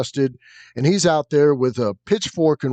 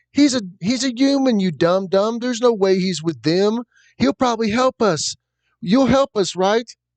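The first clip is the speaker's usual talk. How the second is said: put-on high, pitched-up little girl character voice; 8 semitones higher than usual. Voicing the boy's sister scolding him and asking for help: voicing the boy's little sister. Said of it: "she's like".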